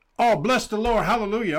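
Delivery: all-excited, bursting exclamation. Retelling what a taxi driver said on meeting him: imitating an excited man. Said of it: "all excited".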